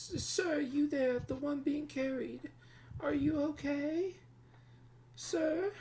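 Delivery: put-on loud elderly woman voice, calling out. Game master voicing an innkeeper addressing a man being carried: older woman innkeeper voice. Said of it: "and you approach the older woman. She's maybe in her mid 60s, / She's maybe in her mid 60s, early 70s, / and you approach the older woman. / She's maybe in her mid 60s".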